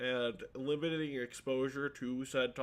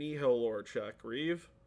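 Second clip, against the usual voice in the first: normal talking voice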